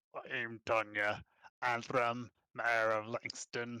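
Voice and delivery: put-on slow, thick, heavy guttural orcish accent. Voicing a half-orc mayor introducing herself with a nod: guttural orcish accent. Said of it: "heavily accented with a guttural orcish twang".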